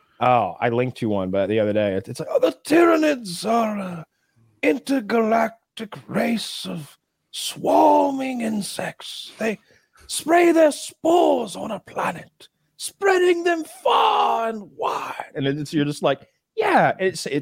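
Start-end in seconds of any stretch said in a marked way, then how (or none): 2.4-15.3 very slow, very high, swooping nature-documentary narrator voice. Describing a Warhammer video to another speaker, the speaker quotes it in a David Attenborough accent. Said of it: "but it's with David Attenborough's accent".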